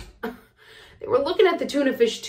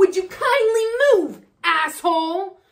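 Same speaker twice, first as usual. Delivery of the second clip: high, enraged, furious scream, acted out; 7 semitones higher than usual. Retelling hitting a person on the head, the speaker re-enacts screaming at him. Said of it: "I screamed".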